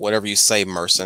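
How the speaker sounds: ordinary talk, nothing marked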